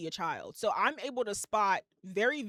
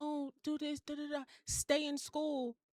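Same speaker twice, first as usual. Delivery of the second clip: gentle, put-on, soft, high, hushed voice; 6 semitones higher, 5 dB quieter than usual. Retelling how someone talked at the end of an interview: imitating a soft voice. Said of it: "that soft voice".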